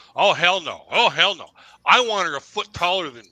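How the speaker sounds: very loud, swooping, dripping sarcasm. Retelling a sarcastic answer to mom's repeated question: retelling a sarcastic reply. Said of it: "I just started getting sarcastic with her".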